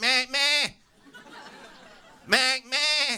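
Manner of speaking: very slow, high, drawn-out, terrified lamb bleat. Recalling a man calling his name across a crowded room, imitating a terrified lamb. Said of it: "he sounded like a terrified lamb".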